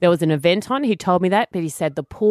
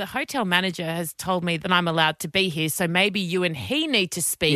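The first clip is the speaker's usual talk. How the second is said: normal talking voice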